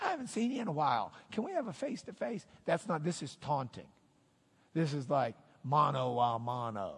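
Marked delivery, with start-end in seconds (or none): 0.0-2.4 high, fast, friendly delivery. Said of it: "don't think he's wanting just to look at him".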